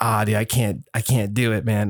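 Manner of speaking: ordinary talk, nothing marked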